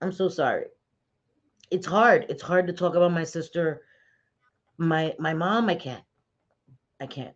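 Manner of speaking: talking while crying, tearful voice. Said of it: "I hate when I start crying".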